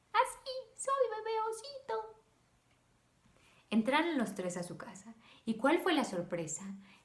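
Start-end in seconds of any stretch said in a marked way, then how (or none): 0.1-2.1 put-on tiny, very high-pitched baby bear voice. Reading a children's story aloud, voicing the baby bear: tiny baby bear voice. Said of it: "él tenía una voz muy chiquita".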